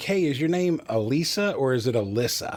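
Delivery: ordinary talk, nothing marked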